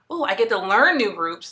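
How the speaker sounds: ordinary delivery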